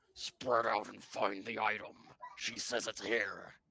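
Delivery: loud, rough, very growly dog voice. A narrator voices what the players hear, in a very growly dog voice. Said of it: "in a very growly dog voice".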